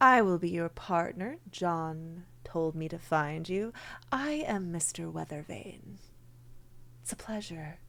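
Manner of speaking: very silky, smooth voice on every word. Storyteller voicing Mister Weathervane introducing himself to Hexblood, in a silky smooth voice. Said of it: "You hear a very silky smooth voice".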